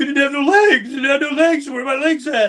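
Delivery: distraught falling-apart breakdown, very high-pitched and loud. Retelling a coworker's impersonation of the speech where he's losing it: Rambo impression, losing it. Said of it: "a pretty good impersonation".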